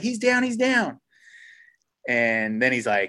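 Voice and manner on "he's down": very high, distant-sounding shout, drawn out falling down. Retelling someone calling back across the creek from far apart, retelling a shout. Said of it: "we're screaming at this point".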